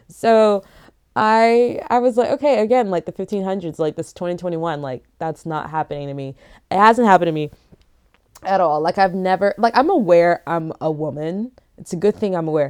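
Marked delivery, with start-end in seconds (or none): none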